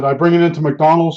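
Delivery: ordinary talk, nothing marked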